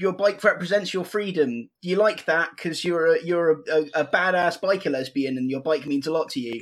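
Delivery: ordinary talk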